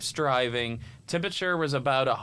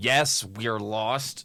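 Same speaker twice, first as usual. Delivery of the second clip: put-on speech through gritted, clenched teeth; 2 semitones lower than usual. Retelling the dad answering his lost daughter: imitating dad talking through gritted teeth. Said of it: "through his teeth".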